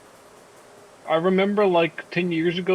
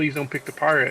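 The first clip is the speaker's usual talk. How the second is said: ordinary talk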